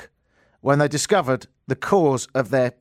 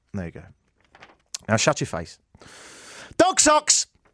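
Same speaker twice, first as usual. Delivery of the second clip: plain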